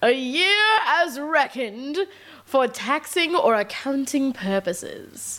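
put-on old-fashioned, old-timey voice, rather British. Asked by another speaker to read a definition aloud, in the old-timey voice. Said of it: "Do it in the old-timey voice".

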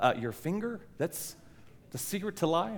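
mock incredulous, doubtful, scoffing sarcasm. Retelling a scene, imitating Mitch's reply: imitating a sarcastic reply. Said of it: "sarcastically and says".

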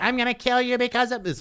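put-on loud, very high, monotone angry child voice. Mocking a child actor's flat acting, the speaker imitates the kid's mad line. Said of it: "Or he's mad".

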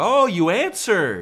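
mock shrill, very high, loud, needling passive-aggressive voice. Retelling what mom says when a call is answered: imitating passive-aggressive mom. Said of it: "she's go".

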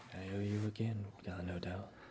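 muttering under breath. Voicing a character in the scene, speaking under his breath. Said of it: "under his breath".

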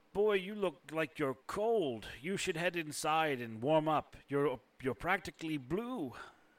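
put-on elderly, very old man character voice. Voicing a quite old pilgrim who greets the party: voicing a very old pilgrim. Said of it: "He sort of shakes his head gently and looks at you up and down and goes".

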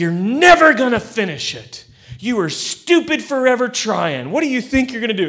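acted high, loud, belittling berating yell. Retelling great-grandmother calling up to dad on the roof: imitating someone yelling. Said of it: "she yells to him".

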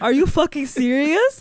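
mock-condescending, belittling tone. Retelling how someone reacted to customers, mock-condescending. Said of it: "making them feel stupid".

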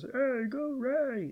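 high, slow, soft puppet-style cheer. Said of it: "That's what he sounds like. He's really quiet".

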